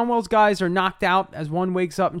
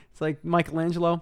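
ordinary talk

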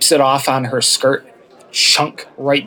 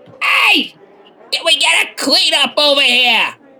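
very high, loud, carrying shout; 14 semitones higher than usual. A woman character turns around after being thanked, shouting. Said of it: "she turns around and shouts".

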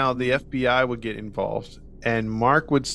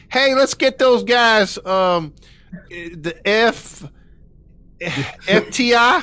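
put-on Southern accent, higher and louder; 10 semitones higher, 6 dB louder than usual. Retelling what a law enforcement guy said about calling in help: imitating a southern accent. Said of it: "one guy that had a Southern accent".

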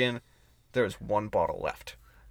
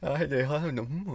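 put-on drunk voice, higher; 6 semitones higher than usual. Retelling his own reply to the girls: imitating own drunk self. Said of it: "I just kept walking 'cause I was so drunk".

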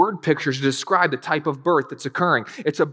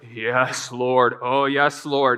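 very slow, long-drawn groaning prayer; 4 semitones lower than usual. Retelling how a man prayed at a wedding: imitating groaning prayer. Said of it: "he started letting out those groans like".

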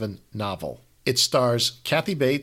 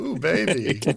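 pleasured, swooning coo; 5 semitones higher than usual. Retelling a TV scene where Al hugs Peg: imitating Peg sounding orgasmic. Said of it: "it's almost like she's experiencing an orgasm".

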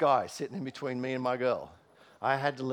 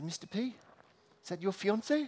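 put-on Maori accent in a schoolkid voice; 8 semitones higher than usual. Retelling what the giggling Maori kids asked: imitating Maori kids' accent. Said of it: "sorry about the accent".

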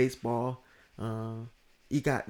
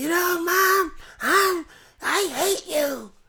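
put-on very high, very slow, screechy voice-breaking teen yell; 5 dB louder than usual. Mocking how a wrestler sounds when yelling: imitating Seth Rollins yelling like a teen. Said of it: "That's what he sounds like when he's yelling".

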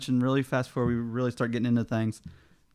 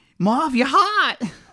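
put-on very high-pitched, loud Chicago accent; 13 semitones higher, 7 dB louder than usual. Talking about a place name that's hard to say, showing off a Chicago accent. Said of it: "you know that Chicago accent".

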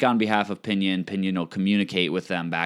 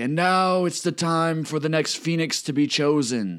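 put-on disembodied-sounding, pitched-up elderly man's voice; 8 semitones higher than usual. Voicing a disembodied voice heard over the city: old man's voice. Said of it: "an old man talking".

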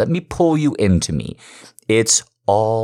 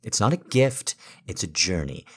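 ordinary delivery

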